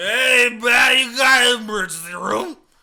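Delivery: put-on, very loud, slow, dazed drawl. Retelling a stabbed stranger asking for the emergency room: imitating a dazed man. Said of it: "fucking out of it".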